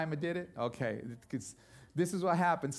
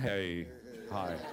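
put-on voice, suddenly dropped, much lower; 9 semitones lower, 4 dB quieter than usual. Telling about becoming a teenager, imitating a voice that suddenly dropped. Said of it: "I used to talk like this, and all of a sudden".

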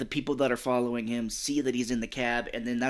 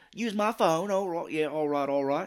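put-on British man's accent; 5 semitones higher than usual. Retelling a cab driver's lines from a movie: stereotypical British man voice. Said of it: "the stereotypical British man".

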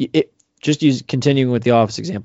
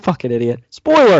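shouting, yelling, higher and louder; 4 semitones higher, 5 dB louder than usual. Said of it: "when I just yelled that?".

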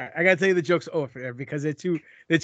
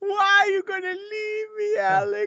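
very high-pitched voice. Asking the other speaker, who may take a new job far away: imitating his mother. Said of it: "that sounds like my mother".

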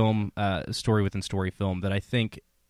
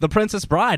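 very high horse race announcer voice; 11 semitones higher, 6 dB louder than usual. Announcing this week's game, saying the title in a horse race announcer voice. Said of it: "I'm doing kind of a horse race announcer voice".

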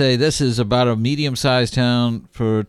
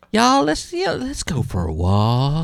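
high swooping sing-song, walk drawn out; 5 semitones higher than usual. Imitating Joel Osteen inviting everyone for a walk: Joel Osteen impression. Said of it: "He would say".

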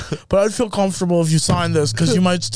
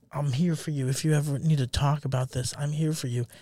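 mock comforting tone, quieter; 3 semitones lower, 11 dB quieter than usual. Imagining a wife at a funeral comforting her husband: imitating a comforting wife. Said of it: "She's comforting you".

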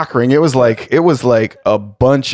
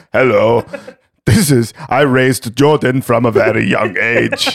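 fake, put-on Eastern European accent. Doing an impression of the speaker's Kansas-born dad: fake Eastern European accent. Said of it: "that's how we're going to do his impression now".

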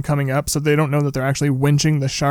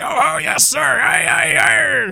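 put-on pirate voice, much higher; 13 semitones higher than usual. Describing a movie scene, retelling one character mocking another: mocking Quint's pirate voice. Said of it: "he's like talking like a pirate, like mocking Quint's very like workman accent".

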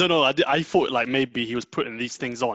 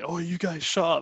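pitched-up, blustering fake tough-guy voice; 5 semitones higher than usual. Retelling how the moderator tried to quiet the debaters: imitating a would-be tough guy. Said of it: "he was trying to be like a big man".

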